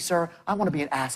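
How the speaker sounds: put-on velvety apologetic voice. Imitating a salesman's pitch to a client: imitating a smooth apologetic tone. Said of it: "this velvety smoothness".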